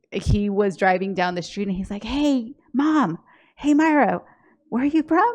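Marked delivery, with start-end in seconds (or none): 2.0-5.3 put-on yelling, higher. Retelling how the son yelled from his car down the road: imitating son yelling. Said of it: "my son yelling".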